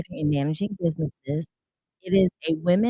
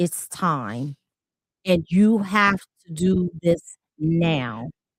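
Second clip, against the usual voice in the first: put-on stern, deep voice. Recalling a man's words that scared the speaker, imitating a stern, deep voice. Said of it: "the type of sternness in his voice that said".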